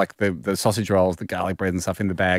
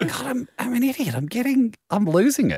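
flustered lady voice, much higher, fretting. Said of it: "She's a bit flustered".

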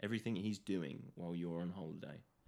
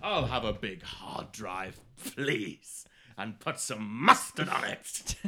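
very loud, very slow bellow; 9 dB louder than usual. Joking about ordering a big hard drive: Vince McMahon voice. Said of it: "Why you sound like Vince McMahon when you do that?".

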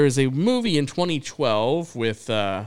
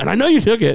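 put-on confrontational, accusing tone, higher and louder; 9 semitones higher, 6 dB louder than usual. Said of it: "he goes right into his face".

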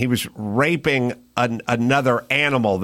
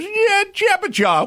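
very high-pitched cartoonish shark voice. Describing a shark character you made up, saying its line in Curly from the Three Stooges voice. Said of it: "he does the voice of Curly from the Three Stooges".

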